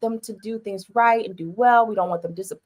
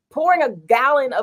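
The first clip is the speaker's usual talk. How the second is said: loud high-pitched yelling. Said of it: "like, yelled because I'm like".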